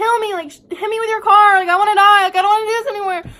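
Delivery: shrill, very high screaming at full volume. Retelling what he screamed while running in front of cars: imitating someone screaming.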